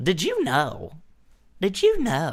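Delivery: very high, loud voice with swooping pitch. Doing an impression of Sheldon Cooper: Sheldon Cooper voice. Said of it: "That's what he sounds like".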